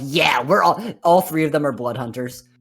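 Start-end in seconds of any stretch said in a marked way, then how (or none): 0.0-0.8 put-on edgy teenager impression. Describing an edgy teenage team of Blood Hunters: edgy teenager impression. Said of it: "this is your impression of them".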